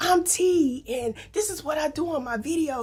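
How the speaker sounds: very high, loud, overly animated delivery.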